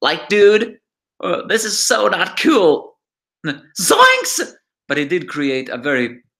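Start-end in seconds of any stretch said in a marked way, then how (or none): 0.0-4.5 very high, laid-back, swooping hippie cartoon drawl. Describing a cartoon character, the speaker attempts Shaggy's voice. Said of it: "I can't do his voice, but let's just say it was something like".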